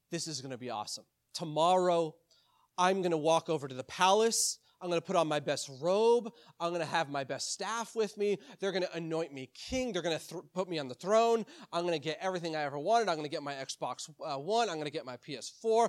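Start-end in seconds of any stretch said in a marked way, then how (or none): none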